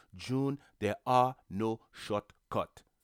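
put-on voice with a Haitian accent. Quoting her mom's old saying to her, in her mom's Haitian accent. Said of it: "in her beautiful Haitian accent".

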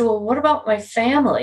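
ordinary talk, nothing marked

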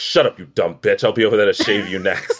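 insane, off-the-rails, unhinged put-on voice. Joking about a kind man from the shows, the speakers make him sound insane: imitating a crazy person. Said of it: "we're making him sound like a crazy person".

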